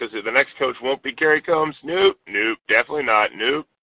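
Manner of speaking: ordinary talk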